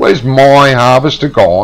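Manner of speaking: heavy stress, my punched. Reacting to something gone missing, stress on the word my. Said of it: "I emphasise the word my".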